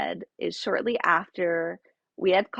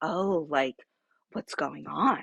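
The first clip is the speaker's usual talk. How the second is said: play-acted stoic, grave, low, somber concern; 4 semitones lower than usual. Retelling a woman's reaction on hearing about power of attorney, mimicking a somber, stoic tone. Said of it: "very like somber and stoic".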